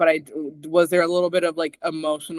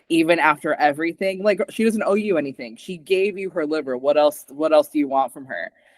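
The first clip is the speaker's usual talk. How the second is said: ordinary talk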